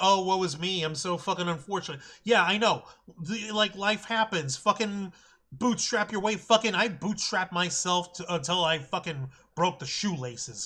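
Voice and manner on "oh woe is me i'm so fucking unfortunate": fake whiny, complaining tone. Denying that he is complaining, then mocking self-pity: mock whining. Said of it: "This isn't me whining like".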